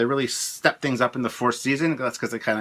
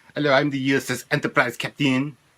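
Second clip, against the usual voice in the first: exaggerated French accent; 2 semitones higher than usual. Recalling how he pictured a French starship captain as a kid, French accent. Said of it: "with a French accent".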